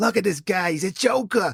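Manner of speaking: put-on New Yorker accent. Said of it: "That's my New York accent".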